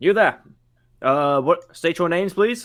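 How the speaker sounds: high, loud guard voice. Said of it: "So they go".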